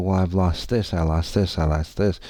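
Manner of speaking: plain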